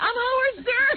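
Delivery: put-on shrill scream, pitched way up. Retelling what he does at the computer: retelling a scream. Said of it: "he goes on a computer and he's screaming".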